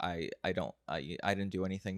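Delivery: plain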